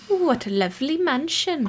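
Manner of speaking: okay-ish Welsh accent. Arriving at a mansion in the game: attempted welsh accent. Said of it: "I can do a kind of okay Welsh occasionally".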